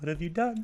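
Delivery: soft gentle voice. Imagining how Gus reacted: imitating Gus, soft voice going higher. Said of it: "his soft-spoken voice going a little higher".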